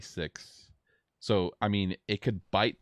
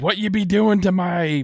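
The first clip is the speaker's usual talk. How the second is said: very shrill, very high, very loud pirate bellow; 13 semitones higher, 14 dB louder than usual. Voicing the pirate lord as he comes up: pirate lord voice. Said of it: "up comes the pirate lord".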